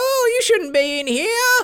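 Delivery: very high, long, slow, mournful wailing cry. Narrating a game, voicing a woman as she turns to the player, wailing. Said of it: "She wails a lot".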